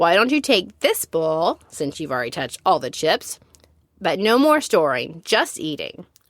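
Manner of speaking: ordinary delivery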